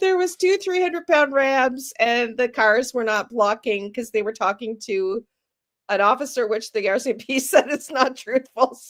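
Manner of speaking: stifled laughter under the words throughout. Speaker recounting what the rcmp said was not truthful, trying not to laugh. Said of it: "I'm trying not to laugh".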